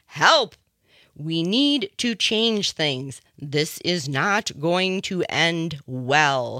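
loud, slow, drawn-out yell. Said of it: "kind of yelling".

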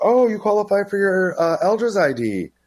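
very high, excited sing-song voice. Retelling what the ID office staffer said, imitating the excited staffer. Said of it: "She's all excited".

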